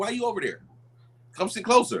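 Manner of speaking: high, sing-song, lively, swooping woman's voice. Retelling what she said on the couch: imitating her voice. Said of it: "Imitate her voice".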